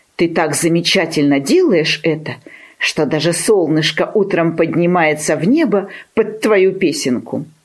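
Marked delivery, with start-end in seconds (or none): none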